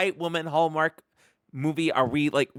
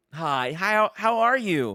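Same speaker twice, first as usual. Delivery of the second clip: tour guide voice like a doll; 2 semitones higher than usual. Imitating a woman's greeting once she drops her accent; tour guide Barbie voice. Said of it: "She literally sounds like tour guide Barbie".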